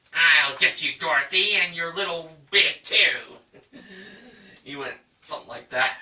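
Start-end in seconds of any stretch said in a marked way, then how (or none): 0.2-3.8 put-on villainous wicked witch voice. Retelling a bidding round, the speaker redoes a man's Wicked Witch impression. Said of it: "did his best impersonation of the Wicked Witch".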